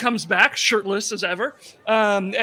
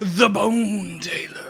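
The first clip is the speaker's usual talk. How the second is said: dark, eerie, spooky, ominous horror-story delivery; 2 semitones lower than usual. Saying a name on a science show, ominous and spooky. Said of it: "so ominous and spooky".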